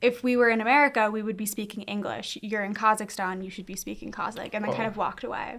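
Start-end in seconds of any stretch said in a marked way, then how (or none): none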